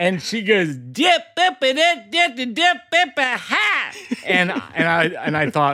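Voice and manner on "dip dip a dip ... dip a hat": acted, very high, far-carrying shout, Southern accent. Retelling an airport stranger's call: imitating a shout in a southern accent. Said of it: "this lady shouted from thirty feet away".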